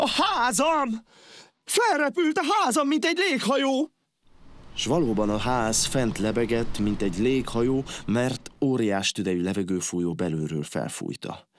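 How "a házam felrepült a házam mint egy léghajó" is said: very high, terrified, frightened outcry. Turning to see something strange behind him, terrified exclamation. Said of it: "s rémülten a fejéhez kapott".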